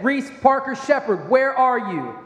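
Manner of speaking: stern, firm call-out. Retelling a moment of worry while calling out to a child who could not be found, putting on a stern voice. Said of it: "I put on my dad voice".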